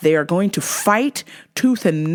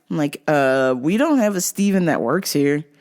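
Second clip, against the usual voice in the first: normal talking voice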